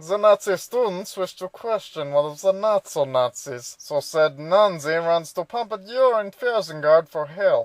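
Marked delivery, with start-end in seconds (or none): 0.0-3.7 deliberately worked, fake German accent. Recapping a show, switching to a put-on German accent. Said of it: "now I get to work a German accent".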